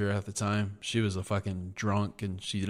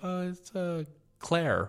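very high-pitched fake put-on girl voice; 9 semitones higher than usual. Retelling calling back and asking for her on the phone: put-on girl voice. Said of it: "call back in a girl voice".

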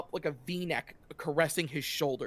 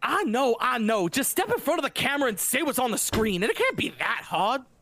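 put-on young woman's pitched-up southern twang; 8 semitones higher, 4 dB louder than usual. Describing a scene, voicing a young woman arguing with a young man, with a southern twang. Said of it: "a young woman with some sort of southern twang to her voice".

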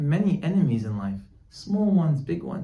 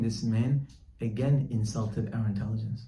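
normal talking voice

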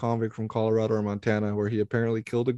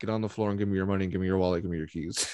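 put-on cool, calm, level-toned, even, quick delivery; 3 semitones lower than usual. Discussing the killer's voice with a friend, imitating Zodiac Killer's calm voice. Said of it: "how calm his voice is".

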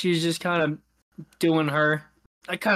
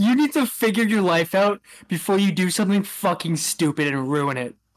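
mock-drunk woman's ranting voice. Retelling a woman at the bar turning to the speaker, imitating a drunk woman. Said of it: "in a super drunk way".

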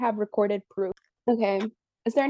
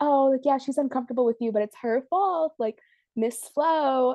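patronizing, superior, condescending, talking-down tone; 3 semitones higher than usual. Mocking how a woman spoke about Florence, imitating her condescending tone. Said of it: "and just so condescendingly".

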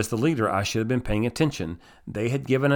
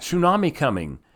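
loud, high-pitched screaming; 6 semitones higher than usual. Retelling how a woman screamed a warning at the hotel door: imitating a woman screaming. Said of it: "she's screaming".

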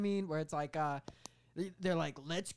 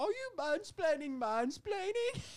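put-on female character voice, higher; 12 semitones higher than usual. Redoing a trailer line after saying "that's not how she sounds". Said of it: "that's not how she sounds".

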